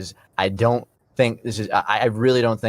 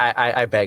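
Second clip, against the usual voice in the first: normal talking voice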